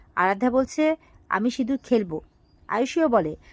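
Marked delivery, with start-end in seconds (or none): none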